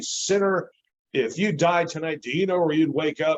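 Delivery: mock yelling. Retelling how a street evangelist got in his face: imitating someone yelling. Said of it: "he's yelling about me".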